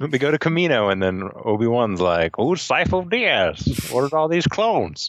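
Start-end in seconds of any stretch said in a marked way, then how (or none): 2.4-5.1 put-on, swooping old-timey voice. Retelling what Obi-Wan says in the show, in an old-timey prospector voice. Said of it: "Did he sound like an old-timey prospector".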